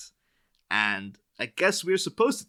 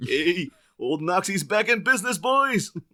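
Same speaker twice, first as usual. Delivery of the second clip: very high, slow cartoon bear voice; 10 semitones higher, 4 dB louder than usual. Imitating Knox asking Bruce Wayne for money: Knox impression like Yogi Bear. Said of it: "my Knox impression kinda went into Yogi Bear territory".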